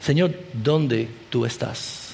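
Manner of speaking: hushed, soft, slow, low-pitched pleading.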